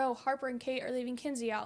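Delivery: ordinary delivery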